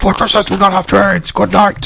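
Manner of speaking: booming, high-pitched alien shout like a newsreader. Talking about a game build, doing it like Morbo does: Morbo impression. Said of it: "You do it like, you know, like Morbo does it".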